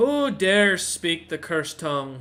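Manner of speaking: loud, booming voice of an ancient stone statue. Voicing an awakening statue challenging the players: awakened statue voice. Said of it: "the statue begins to speak in Dwarvish and goes".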